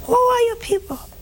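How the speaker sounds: very high preacher voice, swinging widely in pitch.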